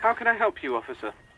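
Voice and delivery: anxious, worried, eager and willing tone. Answering a call from an officer: worried yet ready to assist. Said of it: "He sounds worried, yet ready to assist".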